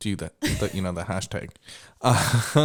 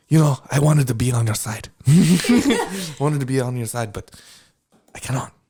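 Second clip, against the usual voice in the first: put-on French accent; 3 semitones higher than usual. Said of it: "do your best Frenchie from the boys".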